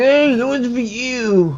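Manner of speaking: acted, very high, very slow, drawn-out, miffed, peeved tone. Voicing a robbed miner in the game who is pissed off: imitating a pissed-off miner. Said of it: "He's all pissed now. He's like".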